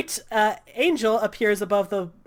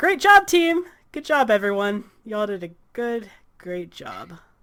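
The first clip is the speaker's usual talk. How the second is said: mocking sarcastic delivery. Voicing a character congratulating the team after a setback: sarcastic praise. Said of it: "I don't appreciate the sarcasm".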